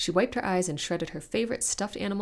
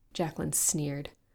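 ordinary delivery, nothing marked

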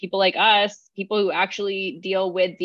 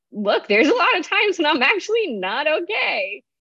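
high, swinging, cracking voice near breaking, fighting back tears; 9 semitones higher than usual. Urging people to have these conversations, trying to speak with the voice breaking. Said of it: "I tried to say that without breaking in my voice".

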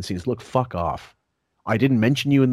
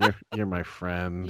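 mock affected delivery, lower and quieter; 4 semitones lower, 6 dB quieter than usual. Mocking how another speaker just said a line: imitating an affected delivery. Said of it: "that affectation".

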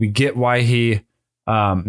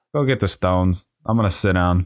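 mock cocky voice, lower, faster; 4 semitones lower than usual. Retelling a scene where Thanos faces three attackers, imitating Thanos's confident tone. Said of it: "This man was so confident".

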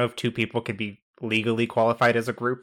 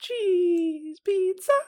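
deliberately bad put-on voice, very high-pitched. Recalling a bad impression from a different movie, as a bad high-pitched Tim Curry impression. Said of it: "you doing that bad Tim Curry impression in that high-pitched voice".

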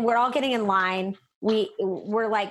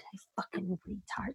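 put-on mutter, much quieter; 3 semitones lower, 15 dB quieter than usual. Retelling what a woman said while walking past, muttered under her breath. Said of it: "under her breath".

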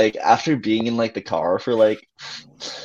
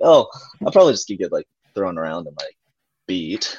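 sarcastic, self-mocking, self-deprecating tone; 3 semitones lower than usual. Recounting a reply to someone who predicted a win: retelling a sarcastic remark. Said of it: "I was like saying it like sarcastically".

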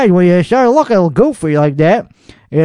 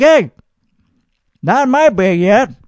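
put-on hard, commanding, very strong forceful tone; 3 semitones higher than usual. Imagining walking out to street racers in the backyard: acting out a very strong tone. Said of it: "with a very strong tone and be like".

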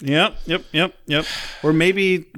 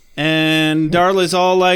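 ordinary talk

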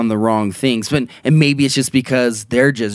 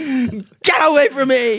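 put-on frightened yell, higher. Retelling a filmmaker lighting a flare at Bigfoot: imitating a scared yell. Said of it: "yelling at Bigfoot when he was scared".

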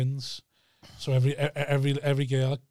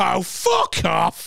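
put-on loud, raspy, annoyed, dismissive snap; 5 semitones higher, 7 dB louder than usual. Retelling how a woman snapped before storming away: retelling an annoyed snap. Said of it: "and stormed away".

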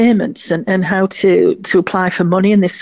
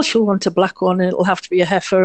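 put-on mocking sarcastic tone. Speaker retells what people said before she went to judge, mimicking a sarcastic remark. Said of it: "they were very sarcastic".

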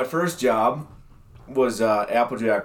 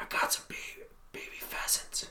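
quieter whisper. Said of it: "starts to whisper".

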